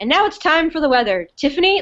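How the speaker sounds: chipper, bright, high, delighted voice. Retelling a favorite line from the show, imitating Russell, chipper. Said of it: "he's just chipper".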